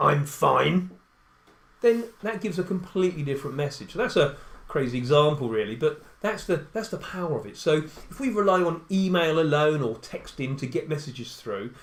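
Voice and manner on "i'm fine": grumpy delivery, louder. Showing how a person with crossed arms answers "how are you": grumpy tone. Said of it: "they say in a grumpy tone".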